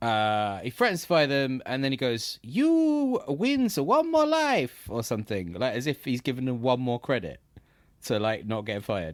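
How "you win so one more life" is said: very high, loud, very slow game-hero voice, "you" stretched. Retelling a man's words after he threatens to fire people, Super Mario voice. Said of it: "in a Super Mario voice".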